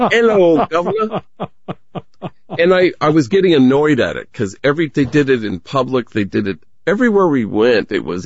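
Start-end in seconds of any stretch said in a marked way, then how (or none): 0.0-1.2 put-on, high-pitched voice called out across distance. Speaker retelling how people greeted them every day, retelling a very loud greeting. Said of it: "in the loudest voice imaginable".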